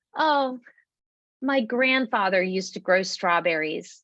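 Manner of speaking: small, mournful, nostalgic sad voice. Telling viewers what passers-by say about the gardens, mimicking a little sad voice. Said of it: "just like that in a little sad voice".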